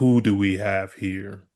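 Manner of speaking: voice of a giant, world-sized cosmic being. Narrator voices Galactus as the group floats before him: booming Galactus voice. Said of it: "the voice with the booming, booming voice asks".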